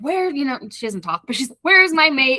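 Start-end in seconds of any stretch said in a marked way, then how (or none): 1.6-2.4 mock angry creature voice, higher and louder. Retelling a scene where a vengeful creature comes looking for her mate: imitating an angry creature. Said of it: "She's, like, angry".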